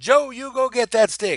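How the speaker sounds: loud, high-pitched shouting. Recalling calling Joe a third time to get a stick, retelling a yell. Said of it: "The third time I yelled".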